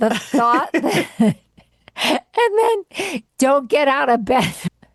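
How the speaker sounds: talking through laughter. Describing a remedy someone told them to try, laughing while talking. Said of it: "I'm laughing, crying right now".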